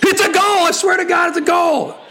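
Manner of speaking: very high, all-out screaming. Calling a Burton Albion goal against Aston Villa, screaming the goal call. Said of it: "Sorry for screaming in your eardrums".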